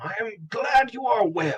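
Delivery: high proud little mouse voice. Voicing a proud mouseling paladin greeting Branch: Udon von Moskowitz voice. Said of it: "with all the pride of a paladin".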